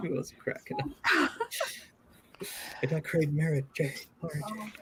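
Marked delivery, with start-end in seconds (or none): 1.1-4.7 angry scream, pitched higher.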